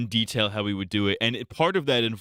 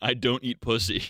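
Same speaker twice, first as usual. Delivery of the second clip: normal talking voice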